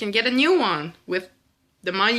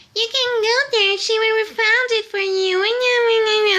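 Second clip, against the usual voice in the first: put-on very high, cocky child voice, drawn-out "you"; 13 semitones higher, 4 dB louder than usual. Retelling a rude customer mimicking a restaurant worker: imitating a childish mocking voice. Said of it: "acting like a child, imitating the girl from the restaurant".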